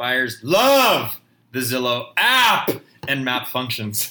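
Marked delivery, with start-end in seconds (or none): 0.0-2.7 loud, slow, emphatic yell. Reading a commenter's all-caps comment aloud: reading Jim's comment yelling. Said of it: "He's yelling".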